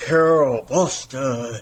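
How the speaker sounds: big, loud booming voice. Retelling a man calling her name across a room, retelling a loud booming call. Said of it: "really loud".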